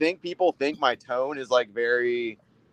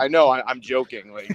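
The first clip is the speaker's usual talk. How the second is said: ordinary delivery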